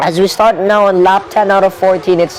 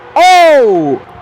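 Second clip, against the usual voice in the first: shouting high and loud. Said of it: "Sorry, guys, for shouting".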